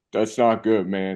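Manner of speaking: put-on stoned man's voice. Retelling what a man on the subway said: imitating a very high man. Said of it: "high out of his mind just goes".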